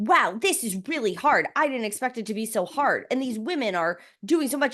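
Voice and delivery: play-acted condescending, patronizing tone, falsely impressed. Speaker imitating a man who went to his wife's fitness class, mock condescending tone. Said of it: "coming from a really condescending tone".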